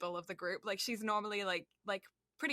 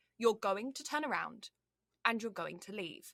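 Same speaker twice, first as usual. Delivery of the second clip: put-on English-accented speech. Retelling what they told a group who then ran off: English accent. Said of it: "the English accent works for something then".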